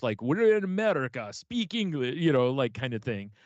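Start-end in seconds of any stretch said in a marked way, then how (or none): 0.2-2.2 put-on, pitched-up Russian accent, very broken English. Retelling a man who suddenly switched voices: russian accent, broken english. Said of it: "he starts speaking with a Russian accent, very broken English".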